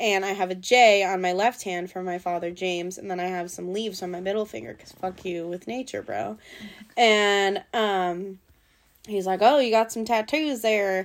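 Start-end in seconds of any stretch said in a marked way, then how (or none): 9.4-11.1 fake, put-on American Southern accent. Retelling what a man said to the speaker, in a put-on Southern accent. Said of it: "he didn't talk in a southern accent".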